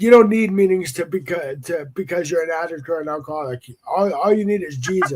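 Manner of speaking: normal talking voice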